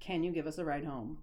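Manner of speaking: put-on emotionless voice. Retelling what a rigid kid asked: imitating an emotionless voice. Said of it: "no emotion".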